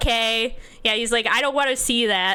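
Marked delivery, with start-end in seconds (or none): none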